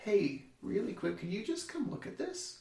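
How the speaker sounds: easygoing, offhand, soft and calm casual tone. Retelling how the speaker called her over about the brother's injury: retelling a calm request. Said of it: "that's the calmest she's heard me".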